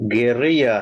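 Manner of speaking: Spanish-style rolled R. Saying the word again in Spanish when asked: Spanish pronunciation. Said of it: "say it again in Spanish".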